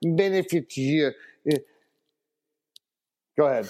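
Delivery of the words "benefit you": put-on Russian accent. Repeating a question about a player in John Malkovich voice from Rounders. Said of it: "I sound like John Malkovich from, uh, Rounders".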